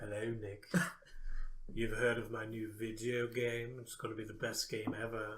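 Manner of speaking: slow, sultry, seductive delivery. Retelling a dream where a game designer spoke: imitating Peter Molyneux, sultry. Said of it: "I don't know why he's so sultry".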